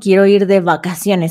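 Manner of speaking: plain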